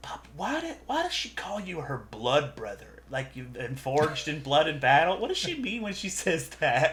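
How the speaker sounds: soft, half-whispered voice. In a group hug, Lugnut half-whispers a question to Zacchaeus: Lugnut half-whispering. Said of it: "and she whispers".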